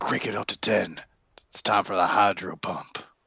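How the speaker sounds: whispering. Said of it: "just whisper into his ear".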